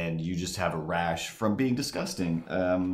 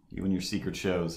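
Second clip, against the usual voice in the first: plain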